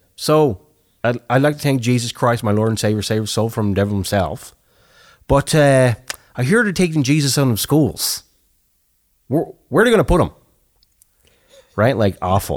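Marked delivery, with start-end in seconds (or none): 0.2-10.3 put-on Newfoundland accent. Retelling a joke a guy told in Newfoundland, in a Newfoundland accent. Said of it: "But great accent".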